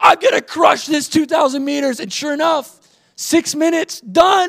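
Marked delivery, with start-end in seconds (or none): 0.0-2.0 fired-up half shout, kept modest. Retelling a rowing race, repeating what was yelled: retelling own yell. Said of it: "I was just yelling".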